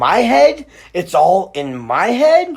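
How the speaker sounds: rising, question-like tune at the end on head. Reading a character's repeated line aloud: rising question intonation. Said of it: "It goes from question mark to period".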